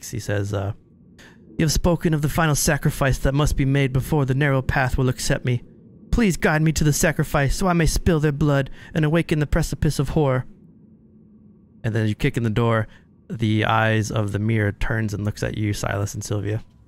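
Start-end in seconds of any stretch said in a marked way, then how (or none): 1.6-10.5 high, whiny, begging pleading tone. Narrator voicing a ghoulish human begging the mirror, whining, begging tone. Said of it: "Almost in like a whining tone".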